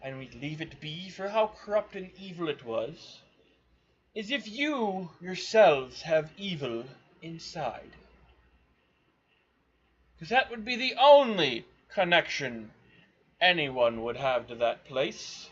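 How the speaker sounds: uptight sophisticated voice. Voicing a character who answers the party's question: very uptight, sophisticated voice. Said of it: "in a very uptight and sophisticated voice says".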